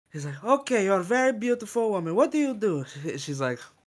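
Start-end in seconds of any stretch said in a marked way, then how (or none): 0.4-2.8 high, pitched-up reporter character voice. Retelling a reporter interviewing a woman: imitating a reporter who sounds like Borat. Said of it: "He almost sounds like Borat".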